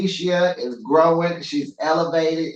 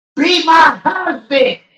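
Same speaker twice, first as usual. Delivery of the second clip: put-on screaming, higher and louder; 13 semitones higher, 9 dB louder than usual. Retelling what she screamed: imitating someone screaming. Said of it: "She screamed at me".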